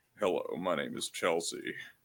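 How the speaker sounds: exaggerated, as macho as possible, super-manly voice. Imagining the actor in drag introducing himself: Ted Levine's manly voice. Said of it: "the manliest voice of all time".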